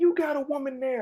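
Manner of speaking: mock angry, cussing rant. Retelling cussing at a movie character in the theater: imitating own angry cussing. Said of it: "and I'm cussing at him".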